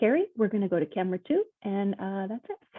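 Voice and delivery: acted steady, calm, reassuring tone. Retelling own words to a panicked anchor, trying not to alarm them: imitating own calm voice. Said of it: "it's that calm voice".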